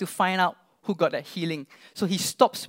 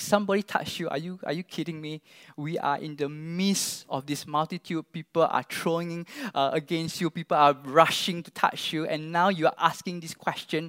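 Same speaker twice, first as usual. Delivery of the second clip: ordinary talk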